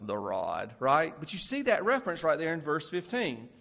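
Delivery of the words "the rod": very low, bass-deep voice. Discussing a verse, speaker says a word in a deep voice. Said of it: "I already want to say that with a deep voice".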